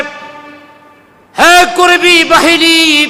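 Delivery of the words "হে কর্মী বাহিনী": loud high calling out. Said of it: "আবু Jahl ডাক দিয়া মনে".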